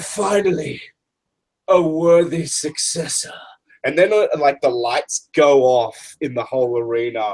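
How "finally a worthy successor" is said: ghostly voice, ringing and echoey. Recounting a voice heard coming through the arena; echoey ghostly voice. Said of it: "echoey, ghosty voice".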